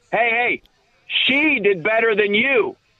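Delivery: acted-out taunting, heckling shout. Speaker retells a man who booed him, imitating a heckler shouting. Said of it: "kind of like shouting this".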